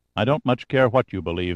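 ordinary delivery, nothing marked

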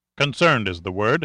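plain reading voice

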